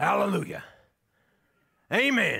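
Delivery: loud, grumbly, grumbling call-out. Recalling Paul calling out during the speaker's sermons, in Paul's grumbly voice. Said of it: "just in a grumbly voice".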